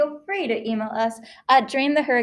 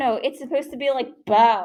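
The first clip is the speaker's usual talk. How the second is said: plain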